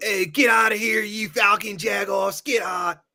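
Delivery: high-pitched, rowdy, heckling sports-fan yell. Speaker describes Philadelphia fans yelling at Ray, imitating a yelling fan. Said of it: "the men and the women will yell at Ray".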